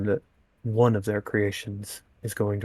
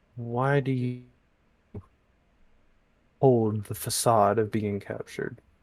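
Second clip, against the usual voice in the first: careful, guarded tone, words picked with great care. A captive speaks so the guards won't hear; quiet, so guards won't hear. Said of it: "he tries to speak this quietly".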